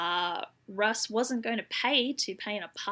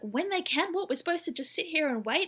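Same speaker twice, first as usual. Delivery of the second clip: mock very irate, pitched-up voice; 8 semitones higher than usual. Retelling a car owner's complaint to a dispatcher: imitating an irate caller. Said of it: "Russ is very irate about this".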